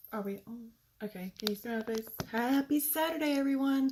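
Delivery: soft, hushed stage whisper. Opening a Saturday livestream while the speaker's son naps, in a near half-whisper. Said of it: "I feel like I'm whispering".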